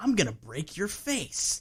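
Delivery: put-on jokey, teasing tone. Quoting a movie character's out-of-place line: imitating Scotty saying it jokingly. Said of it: "says it, like, jokingly".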